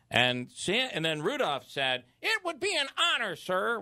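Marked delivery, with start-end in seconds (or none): 2.2-3.8 very high-pitched reindeer voice, way up high. Retelling Santa asking Rudolph to guide the sleigh, then Rudolph's reply: Rudolph the reindeer voice. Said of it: "which doesn't sound anything like him. I can't get that".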